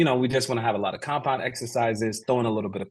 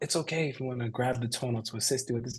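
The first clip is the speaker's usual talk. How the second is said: hushed half-whisper, close in; 8 dB quieter than usual. Retelling what a coach half-whispered mid-set: imitating Coach Tim's half-whisper. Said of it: "whispers to me".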